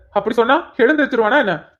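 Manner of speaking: ordinary delivery, nothing marked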